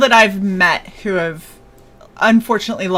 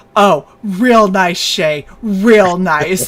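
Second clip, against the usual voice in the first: slow, sarcastic, drawn-out real nice. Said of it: "and he goes".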